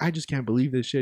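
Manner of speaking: put-on angry, pissed-off tone. Retelling what a cook said after a fight: imitating an angry cook. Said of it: "He was all pissed off".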